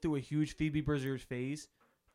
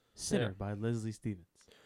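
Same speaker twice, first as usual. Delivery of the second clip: public-radio announcer voice, much lower; 7 semitones lower than usual. Naming a record they've been listening to, in an NPR voice. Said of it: "this is me doing my NPR voice".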